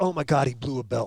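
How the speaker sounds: ordinary delivery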